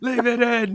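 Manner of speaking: shrill, very loud, high-pitched shouted outburst. Answering a request to shout the line, mock shouting. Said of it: "Just start shouting".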